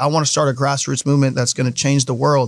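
plain

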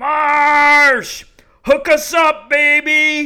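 shrill, booming, very high scream, "Marsh" stretched long. Retelling how someone screamed out to guys far off in center field, retelling a scream. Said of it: "He screams".

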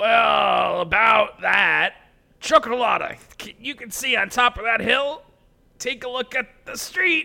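halting awkward voice with drawn-out "well". Answering another character in a scene: voice of someone who can't communicate. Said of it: "I'm trying to do a voice of somebody that does not know how to communicate properly".

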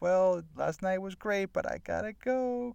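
high, slow, awkward, fake dismissive tone.

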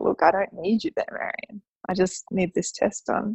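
plain

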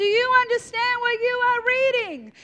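very high, shrill, loud shouted yell. Retelling a bible scene, a runner calling up to a chariot: acting out a yell. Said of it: "he literally would have yelled out".

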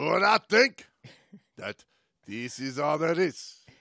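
loud, put-on Japanese accent. Playing a sumo wrestler character, in a put-on Japanese accent. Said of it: "That is a great Japanese accent".

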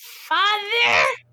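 tiny, squeaky, very high goblin voice. Voicing a goblin as the dwarf reaches toward him: goblin voice. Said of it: "he says to the goblin, he's like".

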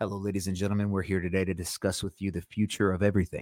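low, soft public-radio announcer delivery. Describing how a dynamic mic sounds, the speaker does an NPR announcer voice. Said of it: "So it's got that NPR".

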